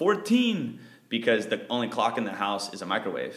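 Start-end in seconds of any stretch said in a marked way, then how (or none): 0.0-0.8 put-on high-pitched yelling kid voice. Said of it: "And he yells out".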